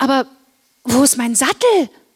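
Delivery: worried, anxious, with real concern. In the stable before the second test, Lara asks worriedly. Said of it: "Fragte Lara besorgt".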